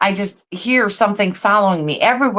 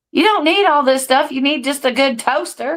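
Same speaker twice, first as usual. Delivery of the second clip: put-on old woman voice, higher; 6 semitones higher than usual. Imagining an old lady scolding someone in the kitchen: imitating an old lady. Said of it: "imagine this old lady going".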